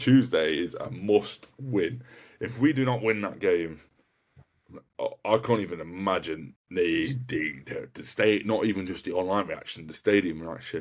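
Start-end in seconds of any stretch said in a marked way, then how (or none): 0.0-2.0 slow, deliberate, clearly enunciated words. Answering a question about Tuesday's game for viewers, slow and clear. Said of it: "I say that slowly and clearly".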